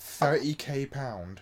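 very slow, mocking dim-witted voice.

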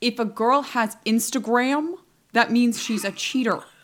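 put-on slipping into a strange posh accent. Imitating Andrew Tate's claims about women: Andrew Tate impression. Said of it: "weird posh accent".

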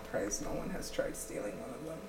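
hushed, unvoiced whispered aside.

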